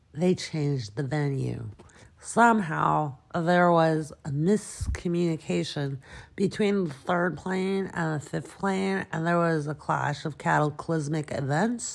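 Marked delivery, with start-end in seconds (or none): none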